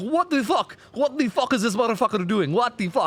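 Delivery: very high-pitched, clumsy, badly done Polish accent. Recommending a competitive player's videos, quoting him: bad Nightlight Polish accent. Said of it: "that was a horrible attempt at a Polish accent".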